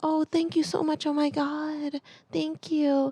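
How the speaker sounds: put-on sweet, high, soft little-girl gushing voice.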